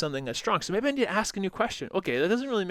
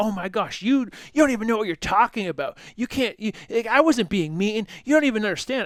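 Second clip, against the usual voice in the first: sudden heated angry outburst, pitched up; 5 semitones higher, 4 dB louder than usual. Retelling a woman's reaction to feedback at the gym: imitating someone blowing up angrily. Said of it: "And she blew up".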